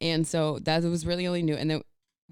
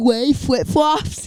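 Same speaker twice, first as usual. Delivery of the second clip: loud, high, bad German accent, sounding half-deaf; 9 semitones higher, 9 dB louder than usual. Answering one of the dads, attempting a bad german accent. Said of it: "I don't know how to do a German accent".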